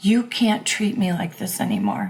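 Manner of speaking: swooping, begging, imploring pleading voice. Recalling pleading with a man who mistreated her, retelling a plea. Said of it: "but pleading".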